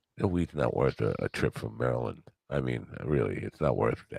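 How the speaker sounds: hushed, secretive half-whispered aside. Saying something unsure if allowed on the air: half-whispering. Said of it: "so I'm just gonna whisper it".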